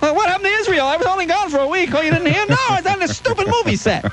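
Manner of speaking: high-pitched, shocked and disbelieving tone.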